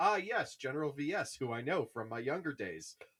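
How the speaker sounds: teasing, mocking send-up voice. Mocking repetitive dialogue between two book characters: mocking imitation of Porter Engle. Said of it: "Porter Engle being like".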